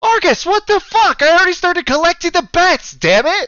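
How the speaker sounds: loud, shrill, high protesting voice. Voicing a character protesting a cancelled wager: Melina protesting. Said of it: "this groan and this protest".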